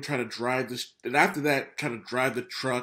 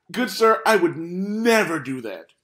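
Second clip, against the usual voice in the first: swooping, mock-sincere, purely sarcastic earnestness; 6 semitones higher, 7 dB louder than usual. Answering the other speaker's Wolverine remark with put-on sarcastic earnestness. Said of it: "that was complete sarcasm".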